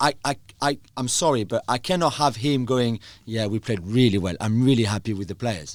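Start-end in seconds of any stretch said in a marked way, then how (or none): 3.3-5.7 play-acted snarky, sarcastic, tongue-in-cheek tone. Retelling what a coach says after a game: imitating Pep Guardiola sarcastically. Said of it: "Was he being sarcastic?".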